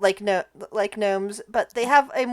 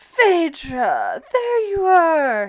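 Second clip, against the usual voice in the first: loud, slow, swooping sing-song call; 6 semitones higher, 5 dB louder than usual. Voicing a smiling figure who beckons a player: Kris Kringle voice. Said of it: "he smiles wide, and he beckons".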